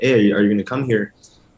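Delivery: put-on Mexican-accented English, easygoing and casual. Retelling asking a recruit a question, imitating own put-on Mexican accent. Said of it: "all this with my accent, of course".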